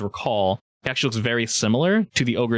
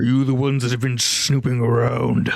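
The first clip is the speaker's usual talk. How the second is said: ogre character voice. Voicing a suspicious ogre questioning the players: voicing an ogre. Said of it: "He narrows his eyes and looks around".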